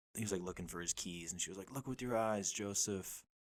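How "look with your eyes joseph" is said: slow, deliberate voice, each word spaced out. Retelling a comedy bit where the comedian imitates his mom. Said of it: "doing, like, an impression of his mom".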